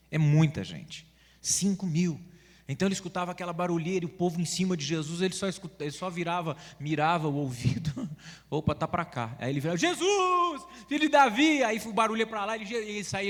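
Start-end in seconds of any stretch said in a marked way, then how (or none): 9.7-11.6 play-acted high, drawn-out calling shout. Retelling a man in a noisy crowd calling out to jesus, imitating someone shouting.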